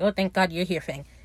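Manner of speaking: ordinary delivery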